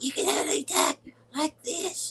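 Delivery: put-on small, very high-pitched little-boy voice. Teasing the other speaker about how they sounded when exhausted: little-boy voice. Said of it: "you sounded like a little boy".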